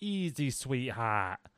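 put-on New York, New Jersey street accent. Quoting a character speaking to Batman in a trailer, put-on New York accent. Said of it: "he's like".

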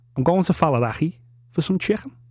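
Liverpool Scouse accent. Showing how to speak Scouse with a simple phrase: Scouse accent. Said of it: "gave him a quick tutorial on, on how to speak Scouse".

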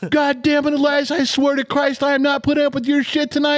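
mock very high, furious, angry yelling. Retelling a phone call where the listener yelled at someone else, imitating someone yelling. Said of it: "He's yelling at somebody else".

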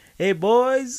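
laid-back, welcoming, easygoing voice, high and loud. Retelling how a coworker greeted the crew: imitating someone smiling. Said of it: "Steve Harvey smiling".

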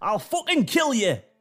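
put-on raging, high, furious scream in a northern accent. Voicing Yorkshire Santa spotting the regular Santa: furious scream as Yorkshire Santa. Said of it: "He screams".

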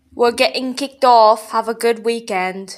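loud put-on British accent, fake. Signing off the show with the others, in a fake british accent. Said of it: "We have to end it in British accents".

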